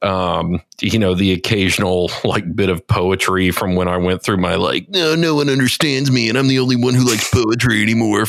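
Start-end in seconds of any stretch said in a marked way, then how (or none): 4.9-8.3 put-on brooding, angsty, lamenting teenage voice. Recalling a poetry phase at seventeen: imitating angsty teenage self. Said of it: "phase when I was, like, seventeen".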